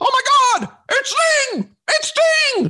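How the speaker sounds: very high, excited announcer voice calling out. Complaining about how he called Sting last night, do a 1998 Tony Schiavone impression. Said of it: "doing an impression of 1998 Tony Schiavone".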